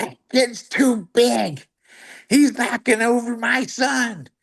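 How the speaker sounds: play-acted very high, drawn-out screaming. Retelling how a mom in the stands started screaming: imitating a mom screaming. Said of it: "she starts screaming".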